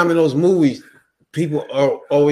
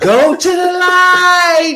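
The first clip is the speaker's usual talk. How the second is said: screaming, higher and louder; 6 dB louder than usual. Retelling a movie scene where the little lady screams: imitating the little lady screaming. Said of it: "the little lady was screaming".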